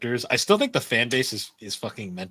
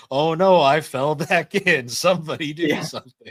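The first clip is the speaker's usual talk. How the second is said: put-on helpless victim voice, loud and very slow; 4 semitones higher, 5 dB louder than usual. Retelling a drill scene where Lemillion plays the victim floating in a river: imitating Lemillion playing a victim. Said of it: "he's like".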